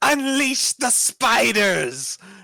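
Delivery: very high, shrill shrieking scream. Voicing a character who summons spiders on a stage: screaming. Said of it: "so she screams".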